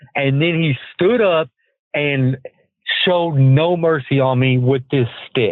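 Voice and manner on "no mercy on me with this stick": normal talking voice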